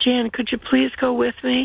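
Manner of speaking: put-on pleading tone. Retelling what a woman asked the speaker, imitating someone pleading. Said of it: "she pleaded".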